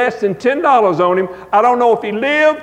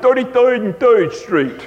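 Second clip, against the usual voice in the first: put-on New Jersey accent. Recalling a man from New Jersey on your bus route, New Jersey accent. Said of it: "he talked like this".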